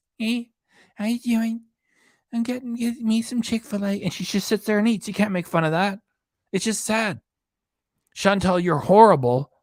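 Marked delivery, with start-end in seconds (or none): 0.2-4.0 tiny, small, high little voice. Imitate Hungry Fat Chick, who just sits there and eats, in a tiny little Hungry Fat Chick voice. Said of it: "with her tiny little voice".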